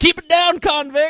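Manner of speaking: high, loud yell. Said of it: "one of 'em yells out".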